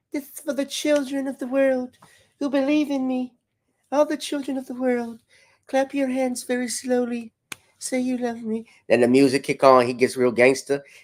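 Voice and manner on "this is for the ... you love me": put-on, very high pop-star speech. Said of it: "in my [name] voice".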